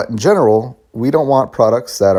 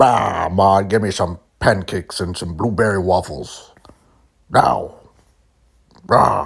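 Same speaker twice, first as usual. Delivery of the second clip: put-on demanding voice; 3 semitones lower than usual. Joking about a man's day at Sony, yelling at his wife: Jim Ryan impression. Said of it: "It's my impression of Jim Ryan".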